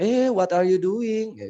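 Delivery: very high English in Indonesian accent. Telling listeners it's okay to speak English with Indonesian-accented English. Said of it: "ngomong pakai bahasa apa logat Indonesia".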